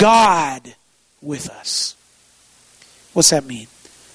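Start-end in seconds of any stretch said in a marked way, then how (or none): 0.0-2.0 main heavy stress landing on God. Preacher unpacking the three words 'god with us', with main stress on god. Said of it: "we're going to put the emphasis on God".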